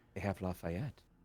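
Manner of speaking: close, soft, hushed, leaned-in half-whisper. Player's character leans in to speak to someone: half-whisper. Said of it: "I just kind of lean in and whisper".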